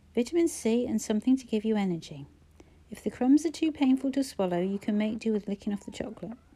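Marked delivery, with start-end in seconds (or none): none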